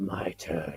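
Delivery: deep villain voice, very low pitch. Describing a scene, the speaker imagines the laughing villain's line, the Source's deep voice. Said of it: "he does the deep voice like".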